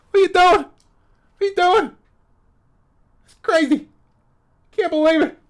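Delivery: very loud, very high-pitched yell. Doing a first try at a Bill Burr impression, angry vibe. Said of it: "That's my Bill Burr impression".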